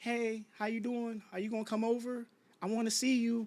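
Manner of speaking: hushed, soft-spoken little voice. Recalling to the listener how they used to talk to him, in a mock soft little voice. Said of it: "where this little soft ass voice came from".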